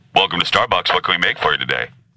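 male voice, fast and rattled off. Retelling a Starbucks drive-thru order, speaker voices the worker, drive-thru worker in a guy's voice. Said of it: "I'll just do a guy's".

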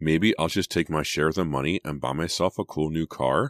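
ordinary delivery, nothing marked

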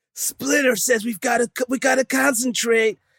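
very high-pitched cartoon voice. Playing at voicing the Turtles: Ninja Turtle voice. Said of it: "do the voices for all the Turtles".

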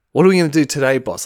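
fawning, servile, brown-nosing lackey voice. Imitating Tony Schiavone in wrestling promos: Tony Schiavone as a brown-nosing lackey. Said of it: "he's such a lackey, brown nose".

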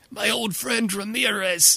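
poor, clumsy smoker's voice, pitched high. Imitating a character's voice while describing him, as a poor Marlon Brando impersonation. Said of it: "sounds like a poor Marlon Brando impersonation".

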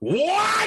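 shrill high-pitched what. Showing how the line was not said. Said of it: "I didn't say it like".

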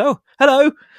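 very high-pitched, baffled, startled, bewildered tone. Retelling a cast member's reply to a greeting: imitating bewildered surprise. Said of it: "extremely bewildered and surprised".

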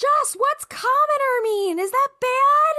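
shrill, very high, loud, drawn-out holler. Retelling a mother at a barbecue: imitating mom screaming across a yard. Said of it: "she's screaming across the yard".

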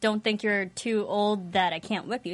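ordinary talk

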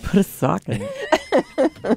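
mock, high, slow, laughing delivery.

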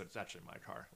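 put-on whisper. Retelling what E mutters about his car: imitating E whispering. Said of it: "kinda whispers".

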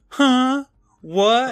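very high, shrill, loud, taunting mocking tone. Recapping a scene after Skipper says 'Huh? What?', Libby mocking Skipper. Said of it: "Libby mocks him, going".

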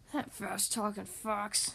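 whispered, hushed, breathy mutter under the breath. Left alone in his chair after the fox leaves with the cash, the bear speaks: muttered. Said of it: "muttered Bear".

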